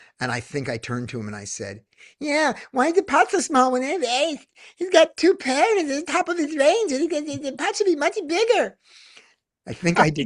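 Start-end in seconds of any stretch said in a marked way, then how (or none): 2.2-8.8 whining voice, pitched very high. Retelling what was said to a player about the pot size, in a whiny voice. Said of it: "when you bring out the whiny voice".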